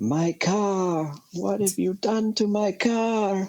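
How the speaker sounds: over-the-top comic scream, very high and slow. Retelling how a man screams about his dented car, imitating comical screaming. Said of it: "he just like screams about it in the most comical way".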